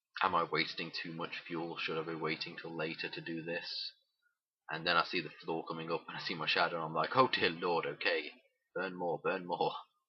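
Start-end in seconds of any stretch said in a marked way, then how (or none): none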